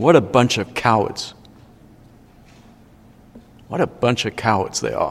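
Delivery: mock muttering under breath. Speaker recounting a movie scene, quoting a Spartan, retelling a mumble under breath. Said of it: "mumbles under his breath".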